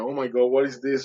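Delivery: put-on crying voice. Retelling seeing a painting of a vision, imitating own past crying. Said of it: "So I start crying".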